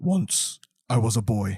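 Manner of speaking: grave, slow, serious movie-trailer narration voice. Describing how a movie trailer opens, demonstrating its narrator: serious trailer voiceover. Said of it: "you know the serious tone set when the trailer starts".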